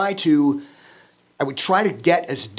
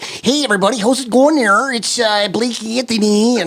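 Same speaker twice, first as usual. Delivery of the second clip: put-on high northern Minnesota accent in announcer style; 7 semitones higher, 4 dB louder than usual. Recalling his old broadcasting-school intro as his past self, northern Minnesota accent. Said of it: "so I had that northern accent".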